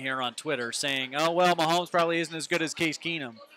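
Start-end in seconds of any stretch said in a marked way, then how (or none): 1.1-3.3 mock dripping, taunting, sarcastic, mocking tone. Reading out sarcastic replies fans sent on Twitter: mocking a sarcastic tweet. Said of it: "people are trying to get sarcastic with me".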